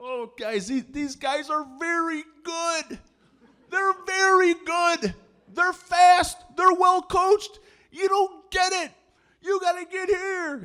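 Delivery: put-on ballistic coach voice, very high, drawn out. Retelling the coach's reaction after the JV team gained yardage: imitating a coach going ballistic. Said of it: "Coach goes ballistic".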